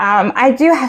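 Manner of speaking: usual speaking voice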